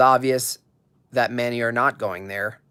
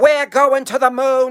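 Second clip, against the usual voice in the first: very high, loud, proclaiming speech-giving voice; 7 dB louder than usual. Retrying after being told the attempt needs work: JFK impression. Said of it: "Needs work".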